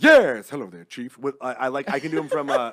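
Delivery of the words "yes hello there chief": very loud, booming comic voice. Answering a request for an impression: generic Robin Williams impression. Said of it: "a generic one where it's like".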